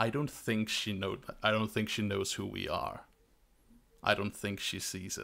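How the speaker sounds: metallic, electronic voice like from a suit speaker. Voicing the guy in the combat suit, speaking from the suit: Arsenic's metallic electronic voice. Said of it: "a metallic voice".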